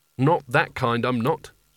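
short, curt, brusque. Rincewind answers Nigel calling him a wizard, short. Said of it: "said Rincewind shortly".

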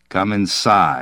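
plain reading voice

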